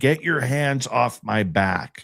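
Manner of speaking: held-back, only hinted cry of pain. Speaker recounting someone touching their back, retelling a scream. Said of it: "And I am screaming".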